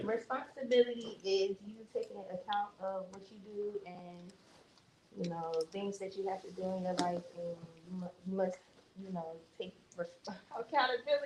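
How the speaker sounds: nervous, halting, stumbling, tripping over words. Called on to answer a question in front of the group, nervous and stumbling. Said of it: "I get nervous when I say".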